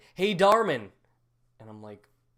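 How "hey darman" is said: very loud hollered yell, high pitched. Retelling being called from the main aisle: imitating father-in-law yelling. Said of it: "he's yelling".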